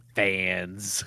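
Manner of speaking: mock disdainful, drawn-out sneering delivery. Teasing someone for how they said it, mock-disdainful 'fans'. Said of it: "You also said it with stank. You were like".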